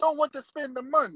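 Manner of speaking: put-on Italian accent. Redoing a friend's complaint about money: Italian impersonation of Paul. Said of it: "that's my Italian impersonation".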